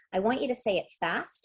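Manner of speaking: normal talking voice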